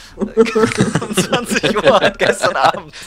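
high, loud, slow reading through laughter.

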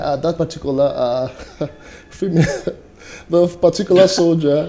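speech broken by laughter. Telling another speaker about a viral proposal video: laughing while talking. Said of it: "Why are you laughing?".

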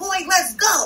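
excited high-pitched yelling. A mother retells yelling while watching her show at home: retelling a yell. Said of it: "I'm yelling like".

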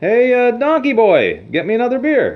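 very high, swooping, loud, shrill yell. Telling a bar joke, a customer calls the bartender: imitating a customer yelling. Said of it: "he yells to the bartender again".

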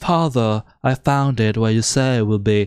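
put-on British accent. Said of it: "in a British accent".

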